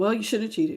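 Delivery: cold, snippy, curt short delivery. Acting out a reply to someone who cheated: acting out a cold reply. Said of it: "Y'all are being very cold to this person".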